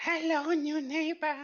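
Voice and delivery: very high, loud shrieking scream voice. A game master voices a character calling to a player during a long rest, very high-pitched scream voice. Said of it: "a very high pitched voice scream".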